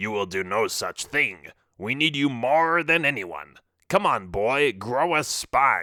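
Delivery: put-on pirate captain's accent. Reading a story aloud, the character insisting the narrator come along: pirate accent. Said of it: "Barlow said with his pirate accent".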